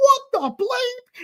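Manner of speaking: acted-out very high-pitched, astonished, excited squeal. Retelling reading an Instagram message in a restaurant: retelling freaking out. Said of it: "I lose my shit in this restaurant going".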